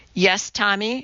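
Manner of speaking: ordinary delivery, nothing marked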